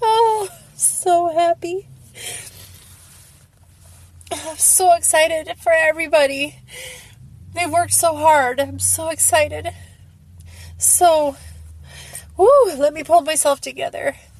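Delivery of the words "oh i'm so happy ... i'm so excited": overjoyed, tearful, laughing and crying at once. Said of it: "I'm laughing and crying".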